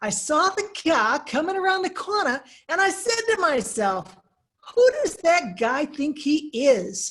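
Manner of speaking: clumsy fake Boston accent. Retelling what a man told him, in a terrible Boston accent. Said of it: "I will admit this is a terrible uh, rendering of a Boston accent".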